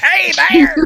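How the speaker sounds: very high-pitched, loud yell. Recalling how people greeted the mayor in a scene, in a Gilbert Gottfried impression. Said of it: "like he's Gilbert Godfrey or something".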